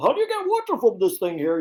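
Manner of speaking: put-on character voice with swooping pitch. Retelling hearing a recorded mistake played back: Ed voice. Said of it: "that's the voice. That's Ed".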